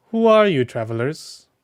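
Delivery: loud shouting. A game master voices a woman calling down to travelers, shouting down. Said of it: "the woman finally shouts down".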